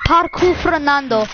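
Parque Fernando in proper Spanish-accented pronunciation. Showing a listener how the name is supposed to be said, saying it in the accent. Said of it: "You wanna know how I say it in the accent?".

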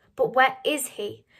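insistent, demanding, pressing hard. Narrator voicing a mother asking about a missing boy: demanding. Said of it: "She demanded".

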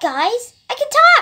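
high loud toy voice. Giving a house tour as the toy Snorky, newly able to talk: voicing Snorky. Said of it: "Snorky, would you like to give them a tour?".

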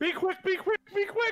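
yelled out loud, very high-pitched. Urging a creature as it sinks under the water: shouting. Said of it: "as you start shouting out".

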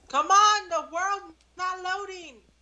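very high, loud shouting outburst. Player yelling at teammates because the game world won't load: yelling. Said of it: "Why are you yelling".

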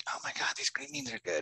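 very high, hushed mutter under the breath. A dad retells his daughter's friend reacting, imitating a mutter under her breath. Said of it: "I hear her say shit under her breath".

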